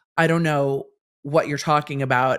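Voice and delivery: ordinary talk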